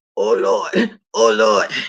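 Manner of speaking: very deep, very low voice, drawn right out. Retelling own reaction, saying it like Sir King: imitating Sir King. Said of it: "I did it like you, Sir King".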